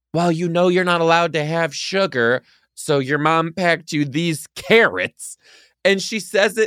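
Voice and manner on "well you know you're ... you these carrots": mock loud delivery, higher pitch. Retelling a scene where she hands a kid carrots: imitating someone saying it loudly. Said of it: "she very loudly, in front of everyone else".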